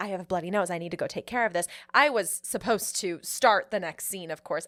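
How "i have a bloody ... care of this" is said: hushed, soft, half-whispered words. Retelling what was said to a co-star offstage: imitating a half-whisper. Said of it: "And I whispered to her".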